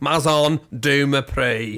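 French words mangled in a put-on Scouse accent. Imitating someone with a Scouse accent saying a French title: Scouse accent on French words. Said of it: "Sound like the guy off Only Fools and Horses".

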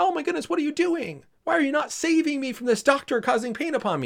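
put-on shrill, very high, screaming, wailing, crying little boy. Retelling a little boy's vaccination, imitating a screaming, crying child. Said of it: "screaming and crying".

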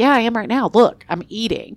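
put-on mad, defensive comeback. Retelling a reply to a friend who asked about eating: imitating own angry reply. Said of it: "And I was mad".

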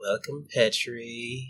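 very quiet, seductive, purring woman's voice. The door opens and greets petri, in a sexy woman's voice. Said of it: "you hear in a sexy woman's voice".

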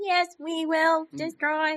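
high-pitched robotic alien voice. Joking about Daleks, doing a high-pitched Dalek voice. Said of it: "a high-pitched Dalek".

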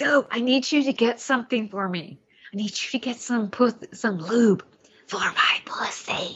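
put-on whisper. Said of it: "the way she whispers it".

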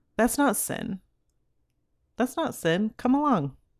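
cool, silky, coaxing tone, high and soothing. Acting out the tempter in the garden coaxing toward sin: imitating a soothing tempter voice. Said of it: "listen to my soothing words".

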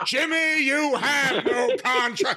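put-on, high, screaming wrestling-promo style delivery. Act out a man in a hotel room at 2 in the morning, doing a screaming Rogers Corner impression. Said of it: "he's screaming out his impression".

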